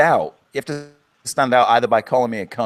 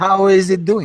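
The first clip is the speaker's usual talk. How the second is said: high-pitched Eastern European vampire accent; 9 semitones higher, 4 dB louder than usual. Greeting a new guest named Nikolai: Dracula accent. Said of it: "you can't do Dracula for Eastern Europeans?".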